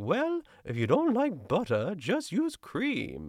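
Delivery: very high-pitched voice with swooping pitch. Retelling an episode's closing quote in a Julia Child voice. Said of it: "in her best Julia Child voice or impression".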